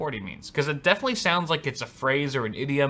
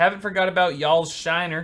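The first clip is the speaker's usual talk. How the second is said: plain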